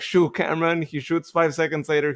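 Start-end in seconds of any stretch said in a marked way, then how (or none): none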